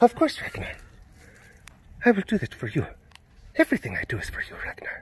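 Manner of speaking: soft, hushed, eerie whispered voice. Webcast host talking to Ragnar in character: Floki impression. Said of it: "It's my Floki impression".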